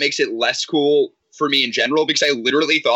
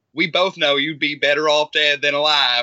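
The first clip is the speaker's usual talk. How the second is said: put-on Cajun accent. Discussing a TV character, the speaker quotes her line in a Cajun accent. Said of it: "she literally just talks like this Cajun-ass".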